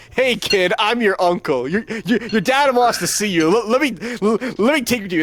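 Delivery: stammering, high, coaxing, sweet-talking voice. Acting out a werewolf man telling a kid he is his uncle: imitating a werewolf man luring a kid. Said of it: "I picked her to, like, walk up there, like".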